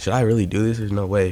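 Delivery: ordinary talk, nothing marked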